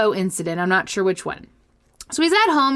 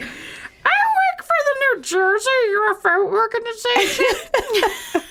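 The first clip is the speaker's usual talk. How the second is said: put-on puppet voice, very high and drawn out; 13 semitones higher than usual. Voicing the caller in a made-up story: Muppet-like put-on voice. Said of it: "You sound like a Muppet".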